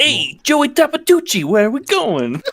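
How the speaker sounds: put-on very high, swooping Boston greaser accent. Trying out a character's accent at others' suggestion: John Travolta Grease accent. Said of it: "Just channel like Grease John Travolta".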